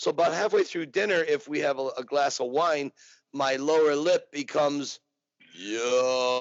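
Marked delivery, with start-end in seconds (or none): 5.5-6.4 put-on tough-guy voice. Showing the lower lip slipping into Rocky after wine: Rocky voice. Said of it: "Rocky comes out a little bit".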